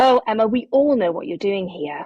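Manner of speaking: hostile, combative, angry, aggressive tone. Recounting what the team leader said to her after she shared a model: imitating a loud, angry voice. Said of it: "in this really loud, angry, aggressive voice".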